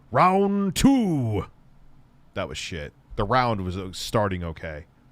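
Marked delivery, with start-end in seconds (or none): 0.1-1.4 poorly done, pitched-up arcade fighting-game announcer voice. Imitating the game's round call, in a Street Fighter announcer voice. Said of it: "sounding like the announcer".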